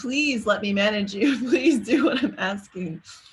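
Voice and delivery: loud, begging, imploring plea. Showing how a parent might talk to kids: mock pleading tone. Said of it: "Or a pleading".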